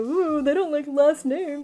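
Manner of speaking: snickering, cackling, chuckling jeering taunt. Retelling what his boys said as they started laughing, mock cackling taunt. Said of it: "they start like ch- cackling and chuckling".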